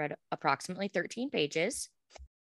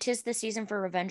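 ordinary delivery

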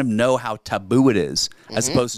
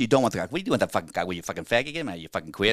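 put-on Boston accent, rattled off rapidly; 4 dB quieter than usual. Practicing different accents in an old joke, this part in a boston accent. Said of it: "And Boston".

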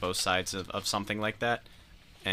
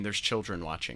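ordinary talk, nothing marked

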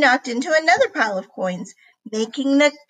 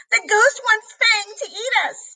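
very high-pitched, scared shriek; 10 semitones higher than usual. A boy responds to a friend during a ghost scare, shrieking. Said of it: "shrieked Bernard".

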